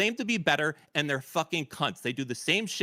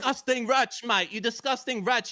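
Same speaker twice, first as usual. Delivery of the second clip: bad fake British accent, much higher pitch; 8 semitones higher than usual. In a heated back-and-forth, one speaker scolds the other in a bad british accent. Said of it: "worst attempt at a British accent I've ever heard".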